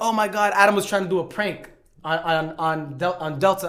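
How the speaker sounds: ordinary talk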